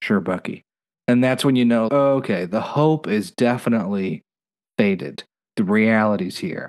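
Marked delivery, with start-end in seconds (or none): 0.0-0.6 solemn put-on voice, lower pitch. Retelling a scene where Buck answers Bucky: solemn Buck impression. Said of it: "with solemnity that just really bites with that accent".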